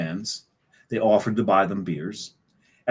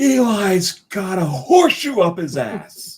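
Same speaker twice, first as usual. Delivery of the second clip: put-on very high, tanked, drunken hollering; 11 semitones higher, 4 dB louder than usual. Recounting a drunk fan at a Giants game, imitate him yelling. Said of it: "he starts yelling".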